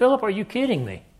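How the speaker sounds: exasperated voice. Retelling how he answered Philip after years together, acting out frustration. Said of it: "you can hear his frustration in his voice".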